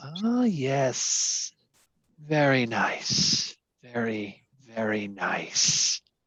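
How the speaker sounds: growly creature voice, monster-like. Voicing a creature tasting a character's blood: creature voice. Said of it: "the creature says".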